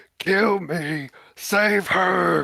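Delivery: furious, angry, high-pitched yell. Voicing a desperate character yelling at a fallen dwarf: angry yell. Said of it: "yells at you, angry".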